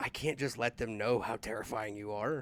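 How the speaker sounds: whispering softly in a character voice. Voicing a character telling a friend a secret: whispering in character. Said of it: "I whisper to him".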